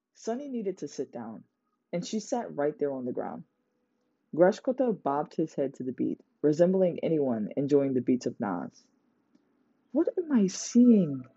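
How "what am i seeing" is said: whispered, higher pitch and slower. Sunny sits on the ground watching Grashkota bob his head, whispered. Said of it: "Sunny whispered".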